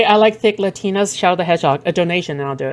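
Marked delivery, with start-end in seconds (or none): none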